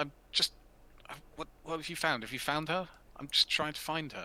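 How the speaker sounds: frightened, cowering stammer. Voicing a cowering character backed against a wall: panicked, cowering NPC voice. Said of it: "He's like".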